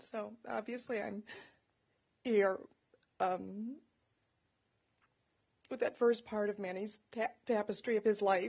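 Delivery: voice holding back tears. Speaking about a dad and grandfather's life, holding back tears. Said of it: "I don't want to cry".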